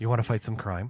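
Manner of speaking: put-on sexy superhero voice. Pitching voice-assistant voices, doing a sexy Batman voice. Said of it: "I'm gonna do the sexy Batman".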